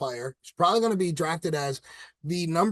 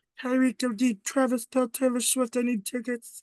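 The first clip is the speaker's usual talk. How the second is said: wild, high little cartoon frog voice; 8 semitones higher than usual. Imitating a quarterback calling plays, in a Kermit the Frog voice. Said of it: "It's like a Kermit the Frog".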